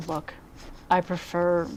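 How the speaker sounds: plain, matter-of-fact, confidential, confiding tone. A game narrator voices a woman addressing the players, in a quieter voice. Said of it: "she says in a quieter voice".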